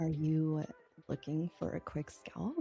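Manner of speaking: flirtatious. Saying the same set line again, now in the next requested manner: flirty.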